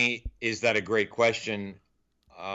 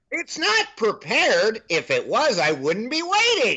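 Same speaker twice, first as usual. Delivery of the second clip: put-on grumpy commentator voice, higher; 12 semitones higher, 4 dB louder than usual. Continuing the rant bit in an Andy Rooney voice. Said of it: "It's like something he'd say".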